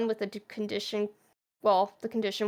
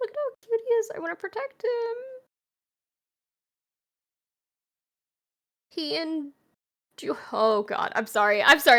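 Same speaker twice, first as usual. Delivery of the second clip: choked-up voice catching with emotion; 7 semitones higher than usual. Talking about a man jeered by audiences, the speaker is getting emotional. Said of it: "I'm getting emotional".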